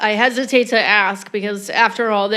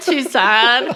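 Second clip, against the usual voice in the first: laughing, mock valley girl voice. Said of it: "he talks like a Valley Girl".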